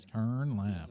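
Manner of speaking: put-on navigation device voice. Joking about having a GPS voice, giving a direction: put-on GPS navigation voice. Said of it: "I don't think I have a G P S voice".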